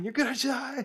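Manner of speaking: very high, loud shrieking scream. Describing a sound changed to friends screaming, imitating screaming. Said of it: "just screaming".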